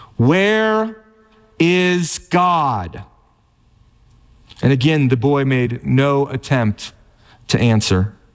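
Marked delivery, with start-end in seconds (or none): 0.2-3.1 even sterner, demanding tone. Retelling a preacher repeating his question to a silent boy: mock even sterner tone. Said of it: "repeated the question in an even sterner tone".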